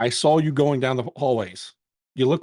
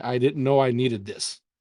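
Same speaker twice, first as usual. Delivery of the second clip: put-on whisper. Retelling what a crying cosplayer said during a hug: imitating a whisper. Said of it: "And she's whispering".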